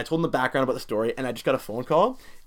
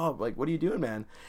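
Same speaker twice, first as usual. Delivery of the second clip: mock-gentle voice, quieter and soft; 7 dB quieter than usual. Retelling what he said on waking when the speaker slid into his bed, gently. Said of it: "but he says it gently".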